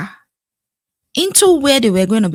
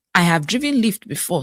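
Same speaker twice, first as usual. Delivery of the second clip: normal talking voice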